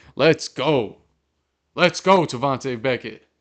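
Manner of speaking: high, loud, hyped-up excited cheering yell. Cheering a player who has just batted the ball down, yelling. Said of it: "I don't know if I'm yelling too loud".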